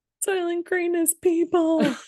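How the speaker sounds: shrill scream at a very high pitch. Quoting the very last line of a film, retelling a scream. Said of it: "screaming it".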